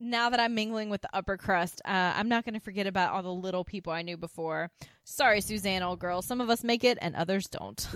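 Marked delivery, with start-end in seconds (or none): none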